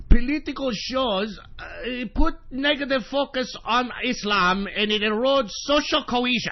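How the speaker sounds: clumsy, bad, fake German accent. Quoting a German cultural council statement: bad German accent. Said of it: "that was a bad German accent".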